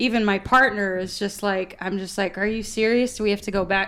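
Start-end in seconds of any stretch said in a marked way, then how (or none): none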